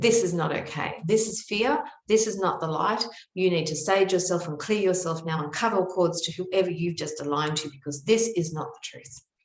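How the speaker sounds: put-on stern, scolding tone. Retelling what an aunt said after calling her outside: imitating a stern scolding. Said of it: "She was very stern with me".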